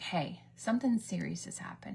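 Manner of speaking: ordinary talk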